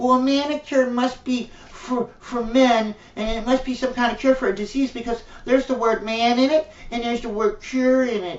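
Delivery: put-on high, little voice like a tiny three-year-old. Mocking people's reasoning by imitating them: mocking like a little three-year-old. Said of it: "you sound like a little three-year-old saying".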